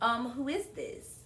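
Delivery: ordinary talk, nothing marked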